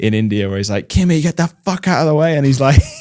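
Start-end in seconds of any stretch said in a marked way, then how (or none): 0.9-2.4 play-acted, higher-pitched yelling. Retelling a race engineer's radio call to a driver: imitating a race engineer shouting. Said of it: "he's the one who shouts at him".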